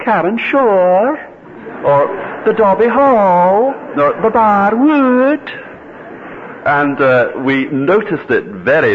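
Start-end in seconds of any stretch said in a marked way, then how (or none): 0.0-5.5 pitch rises at the end on shore, hall and wood. Imitating how locals say place names: rising pitch on Shore. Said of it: "they kind of go up at the end of a word. They say".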